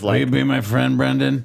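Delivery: raspy, creaky, rough film-actor character delivery. Doing an impression for the other speaker: Michael Shannon impression. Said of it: "that's a good Michael Shannon".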